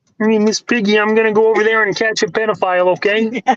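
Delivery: frog voice squeezed way up high. Speak to Miss Piggy in a Kermit the Frog voice. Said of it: "It's a freaking good Kermit the Frog impression".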